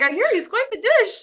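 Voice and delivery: very high, sugary-sweet voice. Quoting a TV scene, imitating Fiona: put-on sweet. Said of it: "Fiona's just so darn sweet".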